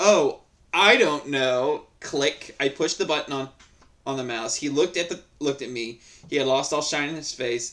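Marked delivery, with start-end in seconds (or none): 0.0-1.9 very slow, thick, heavy, drawn-out sarcastic drawl. Speaker retells answering an angry man, in the most sarcastic voice possible. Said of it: "I said in the most sarcastic voice I could muster up".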